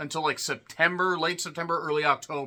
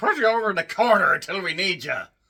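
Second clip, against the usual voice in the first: sudden, raised, put-on Irish accent; 4 semitones higher, 5 dB louder than usual. Retelling what the staff told an interviewer: irish accent. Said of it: "I said it like an Irish person".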